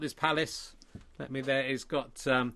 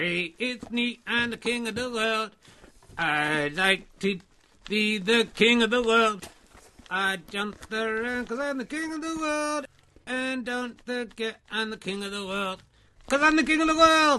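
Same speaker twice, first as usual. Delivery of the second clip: high, pitched-up ventriloquist puppet voice; 7 semitones higher, 4 dB louder than usual. Introducing a little friend to make Ali jealous: King of the World puppet voice. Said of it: "a little friend of mine".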